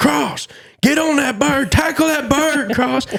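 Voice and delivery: put-on a boy's very high-pitched, loud hollering. Retelling a turkey hunt chase, imitating a boy hollering. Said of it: "he starts hollering".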